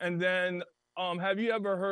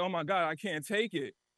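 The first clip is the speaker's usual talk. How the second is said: put-on sobbing voice. Retelling how a crying friend reacted to a movie: imitating a friend crying. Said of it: "he started crying".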